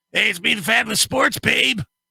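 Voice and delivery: rough, creaky, rasping heavy chain-smoker's voice. Recalling a woman from a show and doing how she talked: Fabulous Sports Babe smoker voice. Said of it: "talked like she'd smoked like forty-three packs of cigarettes".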